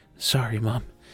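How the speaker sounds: muttered quietly under the breath. Voicing a character charging at a creature: muttered under her breath. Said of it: "and under her breath".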